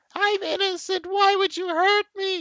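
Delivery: very high, very loud, shrieking cry. Game master voicing a creature just hit by an Eldritch Blast, shrieking and crying. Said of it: "She cries".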